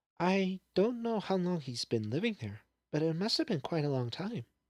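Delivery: gentle, bashful murmur. Narrator reading Fluttershy explaining to her friends, speaking softly. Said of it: "There was a degree of confusion in her expression. / explained [name] softly. / answered [name] bashfully".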